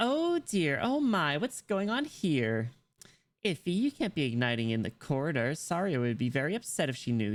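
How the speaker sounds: put-on upbeat, bubbly, girly Valley Girl voice. Trying out a voice for an upbeat, bubbly character, Valley Girl voice. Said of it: "She kind of fits the the Valley Girl".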